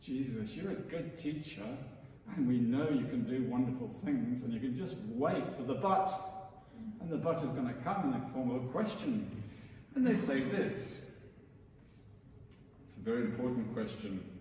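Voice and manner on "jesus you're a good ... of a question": low, sarcastic, mocking tone. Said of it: "There's a hint of real sarcasm".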